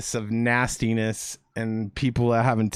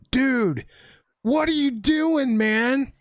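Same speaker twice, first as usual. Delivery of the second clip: acted yell, as if calling across a distance; 13 semitones higher than usual. Retelling how they yelled across a parking lot at someone: retelling a yell. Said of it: "I like yell across the parking lot".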